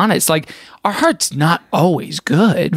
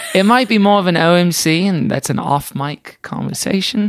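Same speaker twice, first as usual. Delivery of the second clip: fake, put-on British accent. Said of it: "You're doing a British accent".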